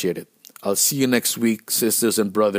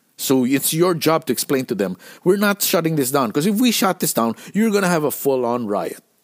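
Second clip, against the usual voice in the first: imitated heated angry outburst, higher; 6 semitones higher than usual. Retelling refusing to stop the show: imitating own heated outburst. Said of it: "I was so heated that I was like".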